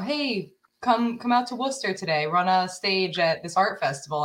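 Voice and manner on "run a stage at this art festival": ordinary talk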